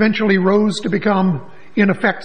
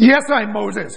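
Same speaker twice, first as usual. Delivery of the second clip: put-on cross, irritated, angry old man voice. Telling a joke, the old man answers the president, in a mock-angry old man voice. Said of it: "said in an angry voice".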